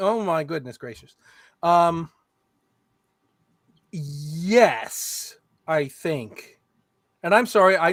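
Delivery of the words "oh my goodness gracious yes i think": slow, sarcastic drawl with drawn-out yes. Answering a chat question about a game rule: snarky. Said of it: "I know I'm sounding very snarky".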